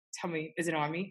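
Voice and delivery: grave earnest voice. Retelling a friend's question about a bee: imitating a dead serious question. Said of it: "looks at me dead serious and goes".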